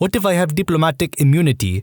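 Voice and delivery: put-on, decent South African accent. Reading a story where the writer questions a police officer: south african accent. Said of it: "in a pretty decent South African accent".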